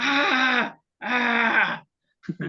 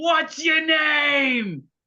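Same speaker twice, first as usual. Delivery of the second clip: high yell at top of lungs, name drawn out; 7 semitones higher than usual. Announcing they will yell back at someone: yelling at the top of lungs. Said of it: "yell back at the top of my lungs".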